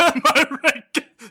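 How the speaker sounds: mock voice, high, slow, laughing.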